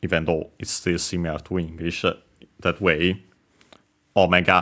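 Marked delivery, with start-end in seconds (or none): 4.2-4.6 Omega stressed on first syllable, high then low. Explaining vowels and accent in a word: Omega with high-low-low pitch. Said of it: "accent on the first syllable, so high, low, low".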